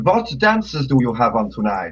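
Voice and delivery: attempted put-on German accent. Customer asking at a club what dances are on tonight, attempted German accent. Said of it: "I'm trying to do a German accent".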